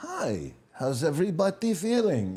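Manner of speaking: put-on easy, casual speech in a Russian accent. Recalling Yakov doing his routine at the table, play him: Yakov voice, Russian accent. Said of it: "With the Russian accent".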